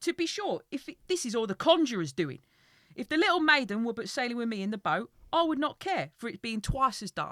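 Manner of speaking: worked-up storybook character voice, loud, rushed. A storyteller reads the tale aloud, voicing Bert's thoughts, agitated Bert voice. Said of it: "as you're doing the voice now".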